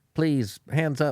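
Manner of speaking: put-on courteous, polite, gentlemanly old man voice. Retelling how a man in his sixties asked for hands up: imitating a gentlemanly old man. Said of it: "this old nu-, man in his sixties, gentlemanly, being like".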